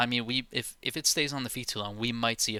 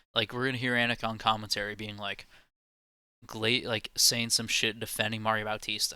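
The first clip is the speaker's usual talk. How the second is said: ordinary talk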